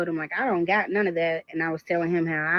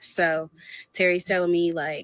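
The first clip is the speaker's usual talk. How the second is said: ordinary talk, nothing marked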